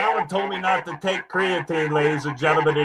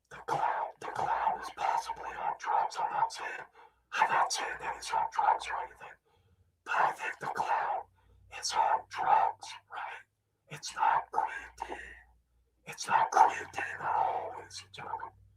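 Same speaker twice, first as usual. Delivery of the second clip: whispered, hushed, quiet narrating delivery. Whispering commentary to viewers while someone sleeps nearby: whispering. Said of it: "I'm here whispering to you".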